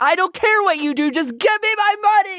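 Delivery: very high, frantic, losing-it outburst. Retelling a woman's message demanding money, imitating her freaking out. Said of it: "she freaks at the end".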